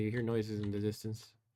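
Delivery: ordinary talk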